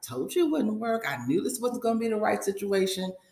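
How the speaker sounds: words with barely suppressed laughter bubbling under. Recapping a scene where a man answers a woman's complaint; mimicking someone nearly laughing. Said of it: "He's laughing, well, practically laughing".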